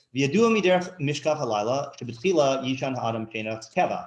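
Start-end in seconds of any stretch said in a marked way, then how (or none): none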